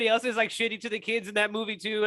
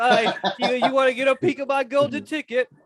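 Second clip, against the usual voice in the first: stammering delivery, pitched up a little; 5 semitones higher, 4 dB louder than usual. Joking about a chocolate seller going door to door: imitating Willy Wonka. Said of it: "he's like".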